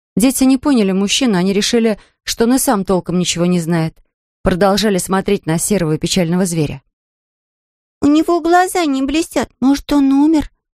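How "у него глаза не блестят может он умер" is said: fearful, anxious, frightened, pitched up. Narrator reads a child asking about the grey animal they are watching: frightened. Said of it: "испуганно спросила Мирра".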